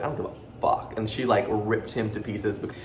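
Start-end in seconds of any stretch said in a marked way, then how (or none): 0.0-0.9 soft, unvoiced whisper. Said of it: "she was just like".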